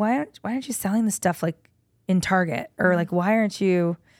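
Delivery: ordinary delivery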